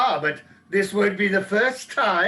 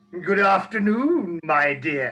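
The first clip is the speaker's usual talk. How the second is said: put-on leering, lecherous old man voice; 3 semitones lower than usual. Rehearsing a scene as a dirty old man greeting a girl: leering old man greeting. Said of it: "in that way and with a voice like that".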